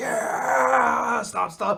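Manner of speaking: high, loud crowd cheering. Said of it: "everyone's like".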